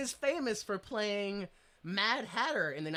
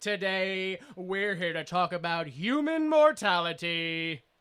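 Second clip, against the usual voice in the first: put-on cheesy TV host voice, louder; 6 dB louder than usual. Opening a podcast segment named after the character: Troy McClure voice. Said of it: "The Troy McClure Hour".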